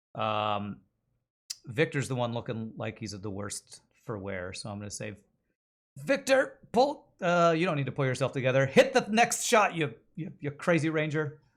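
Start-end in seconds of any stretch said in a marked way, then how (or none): 6.0-11.3 loud, high, encouraging yell. Yelling encouragement to Victor across a fight: yelling encouragement. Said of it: "as I yell out to him".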